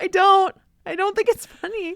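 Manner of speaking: very high voice, laughing nervously throughout. Saying a joke isn't funny to another speaker, nervous laughing while talking. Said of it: "now I'm nervous laughing".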